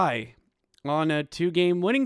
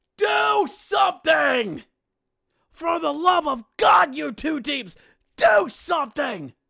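put-on, very high, fed-up, drawn-out bellow; 10 semitones higher, 4 dB louder than usual. Speaker recalls standing up at Giant Center during the game, retelling a bellowed shout. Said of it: "I stood up at Giant Center and I bellowed out".

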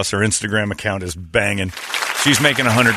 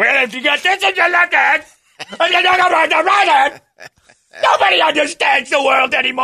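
mock, very high, shrill, all-out shouting; 3 dB louder than usual. Retelling what a homeless man shouted at the speaker's rolled-down car window, retelling a shout. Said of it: "And he is just shouting".

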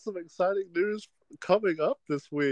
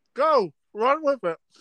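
talking through a mouthful, pitched up; 6 semitones higher than usual. During group introductions, a speaker hands over to the others with a mouth full of chips. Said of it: "I have a mouthful of chips".

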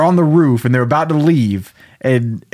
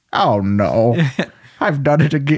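very slow, put-on elderly man voice. Retelling a Christmas story, voicing the character's dismay in a put-on old man voice. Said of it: "I don't know why I'm doing an old man voice now".

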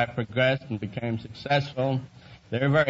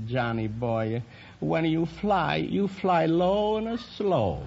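gentle, soft, slow put-on Latin accent; 4 semitones higher than usual. Recalling mother's farewell words on leaving home, in a soft Latin accent. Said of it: "in her soft Latin voice".

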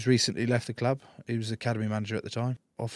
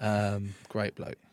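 usual speaking voice

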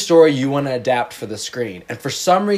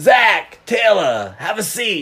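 pitched-up, put-on New Jersey accent; 5 semitones higher than usual. Speaker plays a New Jersey aunt inviting two guests to sit, New Jersey accent. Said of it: "I'm your New Jersey aunt".

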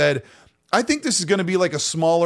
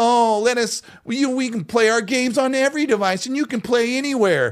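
mock derisive, scornful, high-pitched mocking voice; 7 semitones higher than usual. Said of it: "this panel member going".

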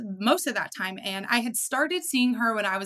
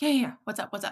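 quick, rushed, hurried, brush-off tone. Retelling her own reply when a woman asked her a question, retelling a rushed reply. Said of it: "Just so rushed".

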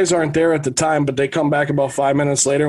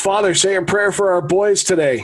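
acted-out calling out, as if yelling; 4 semitones higher than usual. Retelling how a drunk man called out to a priest: imitating someone yelling. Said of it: "he just yells at him".

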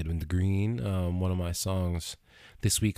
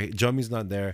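ordinary talk, nothing marked

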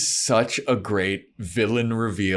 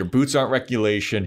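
usual speaking voice

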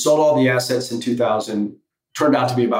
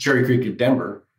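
normal talking voice

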